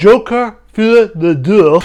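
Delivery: slow, terrible, put-on French accent. Saying a film's title aloud: terrible french accent. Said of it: "that's a terrible French accent I put on there".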